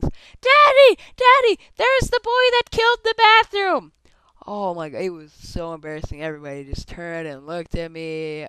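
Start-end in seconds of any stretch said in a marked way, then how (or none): 0.0-3.9 put-on very high, very loud, shrill little-girl yell. Retelling how a girl in a store spotted the speaker: imitating a girl shouting. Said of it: "shouts at the top of her lungs".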